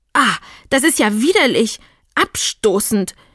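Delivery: wild, furious, raging outburst. She jumps off the stool in a rage; furious. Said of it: "Sie sprang vom Hocker rasend vor Zorn".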